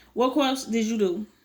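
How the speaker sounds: ordinary delivery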